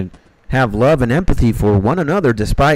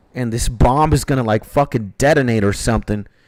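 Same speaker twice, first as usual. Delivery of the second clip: ordinary delivery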